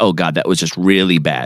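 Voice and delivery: ordinary talk, nothing marked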